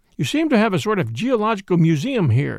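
ordinary delivery

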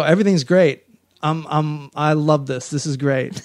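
normal talking voice

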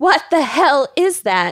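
sudden, freaked-out, panicked scream of alarm. Speaker recalling a sudden fright during treatment, retelling a freaked-out scream. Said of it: "I immediately freaked out and screamed".

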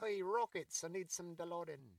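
high, fake put-on English accent. Speaker voices what the dog probably said: put-on English accent. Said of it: "I use that voice because my dogs are English cream golden retrievers".

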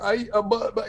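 halting, high-pitched, very slow stuttering stammer. Retelling how a teacher reacted to a class riot: imitating Mister Fred stammering.

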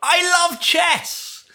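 very high, full-voiced triumphant yell. Retelling jumping and punching the air after a chess win: retelling own yell at top of voice. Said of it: "and I yelled".

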